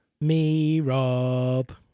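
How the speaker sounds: retro console-like voice. Introducing yourself on the show, sounding like a Sega Mega Drive. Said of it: "you sounded like a Sega Mega Drive".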